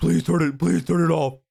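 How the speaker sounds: high, rough, creaky ghostly pleading voice. Acting out ghosts reacting to a spirit box: pretend ghost begging. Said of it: "they go".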